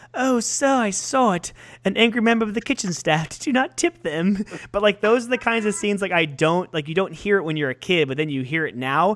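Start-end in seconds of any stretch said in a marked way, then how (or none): 0.1-4.4 put-on English accent, pitched up. Retelling a scene where a lime gets thrown at a man; imitating an English accent. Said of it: "say it exactly how the person says it with English".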